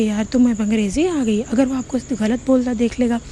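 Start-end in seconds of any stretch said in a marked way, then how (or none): none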